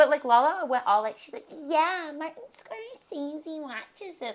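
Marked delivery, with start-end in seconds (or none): 1.6-4.3 put-on childish voice, higher, quieter, slower. Retelling what Lala said, imitating Lala talking like a four-year-old. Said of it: "why did you just start talking like a four-year-old?".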